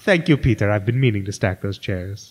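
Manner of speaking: cartoon villain voice. Reading a cartoon quote aloud, the speaker slips into Doof's voice. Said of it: "I started to read it like I was Doof".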